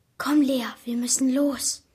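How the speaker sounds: wavering, trembling, quavering voice. A urges his sister lea to leave the building with him, trembling voice. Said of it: "forderte A und mich mit zitternder Stimme auf".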